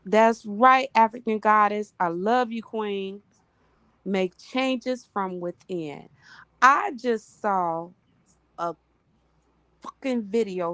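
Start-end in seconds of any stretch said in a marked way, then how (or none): 6.6-10.7 angry, in a bad mood. Breaking off mid-talk, angry. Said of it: "I'm angry".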